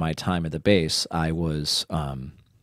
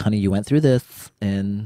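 raised, put-on motherly voice; 4 semitones higher, 6 dB louder than usual. Quoting what their mom said: imitating mom's voice. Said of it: "why is that my mom's voice?".

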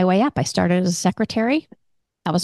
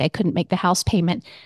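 ordinary talk

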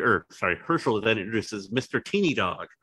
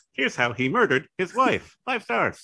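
high, odd text-to-speech female narrator voice; 9 semitones higher than usual. Imagining a narrator telling how people got killed, in a weird TikTok lady narrator voice. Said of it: "that weird TikTok lady narrator voice".

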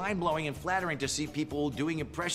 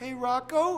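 upward lilt, rising at the end of "Rocco"; 10 semitones higher, 3 dB louder than usual. Imitating how this guy talks, calling to Rocco; rising at the end. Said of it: "kind of going up at the end of the sentences".

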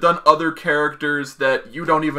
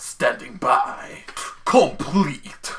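put-on Japanese-accented English, much slower; 4 dB quieter than usual. Describing the voice line a belt plays: Japanese-accented English. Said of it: "in a Japanese voice trying to speak English".

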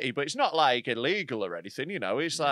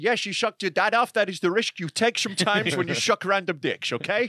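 convincing put-on Dutch accent; 4 semitones higher than usual. Imitating how the dutch would answer: dutch accent. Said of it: "that was a very good Dutch accent".

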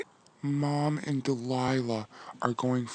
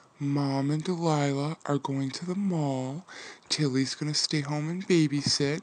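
ordinary talk

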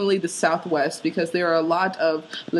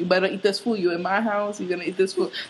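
clumsy, bad put-on Latin American accent; 2 semitones higher than usual. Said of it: "That was a bad accent".

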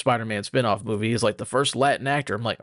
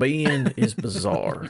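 put-on country accent with sing-song tune. Answering the rest of the questions in a put-on country accent. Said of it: "I'm going to answer the rest of these in a country accent".

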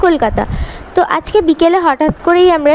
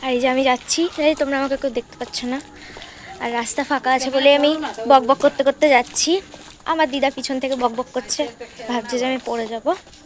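very soft, hushed speaking. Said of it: "একদম আস্তে আস্তে কথা বলছি আমি".

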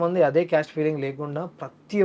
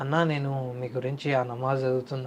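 ordinary talk, nothing marked

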